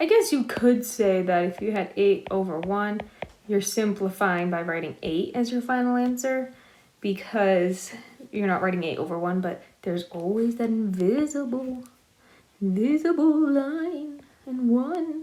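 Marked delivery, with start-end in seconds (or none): 9.4-15.2 high, very slow, eerie ghost voice. Explaining a math point, in a spooky ghost voice. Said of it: "I did the spooky voice".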